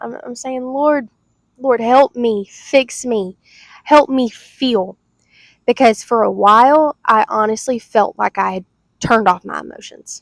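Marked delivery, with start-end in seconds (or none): 0.6-5.0 acted, slow, tearful, crying voice. Retelling own prayer while crying to the Lord: retelling a tearful prayer. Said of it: "I'm crying my eyes out".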